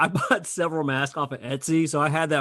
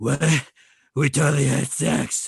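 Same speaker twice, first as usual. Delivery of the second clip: raspy, creaky, growling parody superhero voice. Retelling a parody scene, doing Pete Holmes' Batman voice. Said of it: "Pete Holmes' Batman's like".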